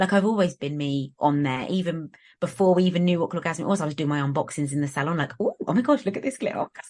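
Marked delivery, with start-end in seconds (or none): 5.4-6.7 put-on squeaky, high, little, over-excited voice. Recalling her old unboxings in the salon, retelling in squeaky excited voice. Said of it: "My squeaky little voice".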